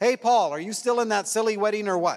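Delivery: very loud, carrying shout. Telling how his phone went to speaker during a silence: imitating Lynette, very loud. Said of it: "says in a very loud voice".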